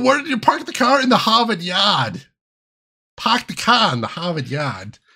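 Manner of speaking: put-on Boston accent. Speaker tries accents for a co-host, now doing a Boston accent. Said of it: "if I try to do a Boston accent".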